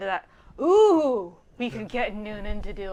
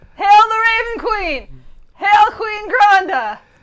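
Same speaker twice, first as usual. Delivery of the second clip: put-on drunken character yell, pitched higher; 11 semitones higher, 12 dB louder than usual. Playing Oven in a group scene at a wedding, drunken yelling. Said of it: "my yelling drunkenly".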